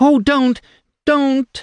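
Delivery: shrieking, very high and loud. A frightened woman, seized by a man, struggles and shrieks. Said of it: "She shrieked".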